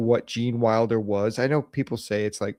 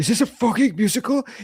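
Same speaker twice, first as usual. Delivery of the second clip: put-on angry outburst, higher and louder; 11 semitones higher, 4 dB louder than usual. Retelling a friend's reaction on discovering a film was a musical: imitating someone getting mad. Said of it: "He gets so mad".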